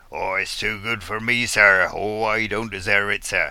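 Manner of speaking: put-on West Country accent, grovelling, apologetic mutter. Speaker demonstrates groveling to whoever is in charge of the weather, stage West Country accent. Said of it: "I find a stage West Country accent works quite well".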